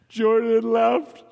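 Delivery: high, blubbering sob through the words. A friend pleads to be told the truth; answer, blubbering crying. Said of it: "start blubbering crying the minute I say".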